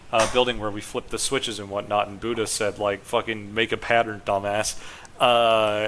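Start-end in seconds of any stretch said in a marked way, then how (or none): none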